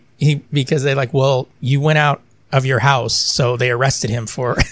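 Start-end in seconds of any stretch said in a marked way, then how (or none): none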